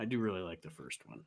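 low, soft aside.

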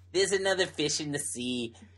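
bad, put-on South African accent. Joking through a hypothetical, in the worst South African accent. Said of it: "the worst South African accent".

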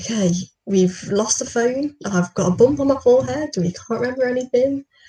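put-on slight Brummie accent. Telling how two pals greeted him on a bench, imitating their Birmingham accent. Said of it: "in their little Birmingham accent".

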